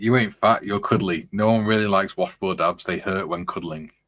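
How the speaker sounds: ordinary talk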